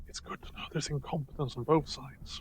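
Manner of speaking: breathy, very quiet, hushed stage whisper. Streamers whispering their commentary on the pilots: whispering. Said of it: "I'm gonna whisper the pilots".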